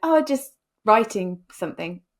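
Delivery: mock awkward, offhand, brushing-off tone. Retelling answering a stranger who loudly asked what they were working on, retelling an awkward reply. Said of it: "Kind of awkwardly".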